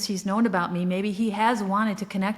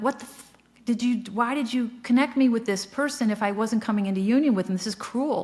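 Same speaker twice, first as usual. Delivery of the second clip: furious, restrained ranting, anger held in, half-voiced; 2 semitones higher than usual. Retelling screaming at spirit guides in anger: imitating own angry screaming. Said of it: "I was screaming at my spirit guides in anger".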